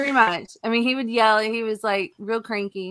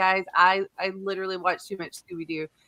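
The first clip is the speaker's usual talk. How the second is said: ordinary delivery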